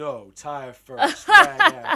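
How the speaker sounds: booming, slow delivery with swooping pitch. Retelling a film scene, quoting the character: Brad Pitt impression. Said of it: "my best Brad Pitt impression".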